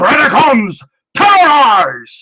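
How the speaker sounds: high, loud screamed delivery. Doing a Beast Wars impression: David Kaye impression, Sean Connery screaming. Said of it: "That's my impression".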